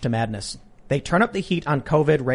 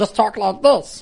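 high, squeezed, closed-throat creature voice; 7 semitones higher, 4 dB louder than usual. Explaining how easy the Smeagol impression is, then showing it: closed-throat Smeagol voice. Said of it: "close your throat while you're talking".

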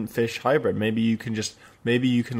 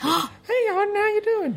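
tiny, very high, cute little voice. Imagining a teacup pig with a human mind, voicing him in a really cute voice. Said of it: "a really cute voice".

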